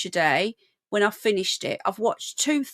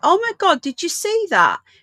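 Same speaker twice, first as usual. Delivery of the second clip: thrilled, wonder-struck, high excited exclamations; 7 semitones higher than usual. Watching these for the first time with viewers, in an excited voice. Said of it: "You're hearing my excited voice".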